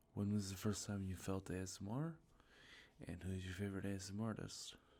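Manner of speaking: ordinary talk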